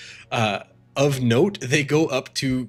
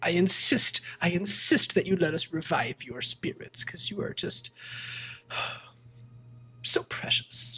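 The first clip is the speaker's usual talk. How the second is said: tearful voice, higher; 6 semitones higher than usual. Voicing an attendant insisting a guest stay for care: near tears. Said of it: "And she's, like, at tears".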